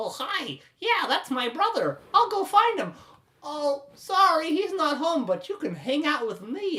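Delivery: creepy, flirty voice. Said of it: "as he creepily puts his arm around".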